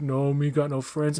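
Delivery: slow, simple, broken speech. Retelling a movie scene where the shark character answers: King Shark voice. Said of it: "And he's like".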